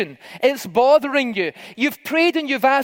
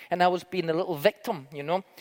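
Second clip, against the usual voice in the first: ordinary delivery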